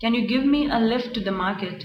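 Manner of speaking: ordinary talk, nothing marked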